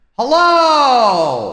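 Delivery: booming, shrill, very loud, high, long-held yell. Testing the echo in the room: yelling louder. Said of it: "I just need to yell a little louder".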